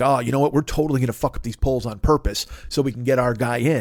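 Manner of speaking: ordinary talk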